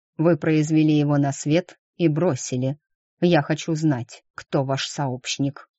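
ordinary delivery

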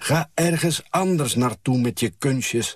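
loud, shrill calling out. Reading a mother on a square calling out to someone doing tricks, shouting. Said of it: "roept mijn moeder".

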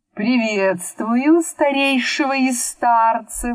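sneering, taunting tone. Narrator reads a wizard greeting an old man, mocking. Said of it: "насмешливо произнес волшебник".

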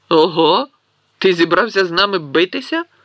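sneering, mocking, jeering tone. Narrator reads a boy taunting another boy who has just stood up: mocking sneer. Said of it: "глузливо вишкірився Мелфой".

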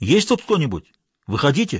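ordinary delivery

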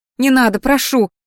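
frightened, breathing fast. Narrator reads Rebecca answering the magister, frightened, breathing fast. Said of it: "испуганно вскинула глаза, учащенно дыша".

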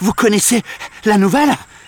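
very high, breathless, panting voice. A fisherman runs up to two men with news, panting, out of breath. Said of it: "Leur demande-t-il en haletant".

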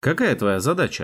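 ordinary delivery

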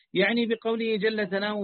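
normal talking voice

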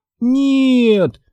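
very high, long, drawn-out wailing shriek. Narrator reads Daphne answering her sister Sabrina's question, screaming. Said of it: "завопила Дафна".

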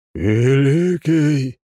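creepy, eerie, spooky voice. Narrator reading the skeleton guard's greeting, in a creepy voice. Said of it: "произнес он своим жутким голосом".

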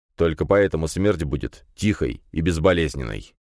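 plain reading voice

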